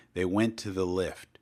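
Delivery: ordinary delivery, nothing marked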